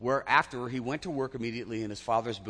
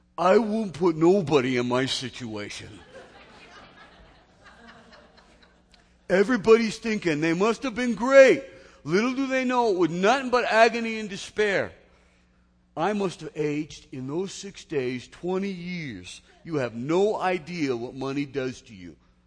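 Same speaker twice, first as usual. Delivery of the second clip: best put-on South Philly accent, loud and high; 7 semitones higher, 8 dB louder than usual. Quoting an unemployed longshoreman's answer about being rich for days: [name]'s South Philly accent. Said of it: "in my best South Philly accent".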